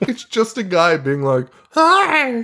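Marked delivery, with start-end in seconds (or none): 1.7-2.4 very high, squeaky, extremely high-pitched puppet voice. Imitating a talking puppet's greeting, in a high-pitched puppet voice. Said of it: "it talks in the craziest high-pitched voice".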